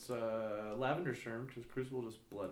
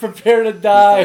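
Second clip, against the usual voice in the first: shouting in character, higher and louder; 9 semitones higher, 32 dB louder than usual. Shouting at an enemy in the fight: screaming in character. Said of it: "scream all that shit about killing a Smurf, my Smurf, prepare to die".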